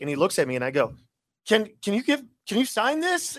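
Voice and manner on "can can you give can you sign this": high, stammering, tripping over the words. Retelling asking a famous player for an autograph: imitating own past stuttering.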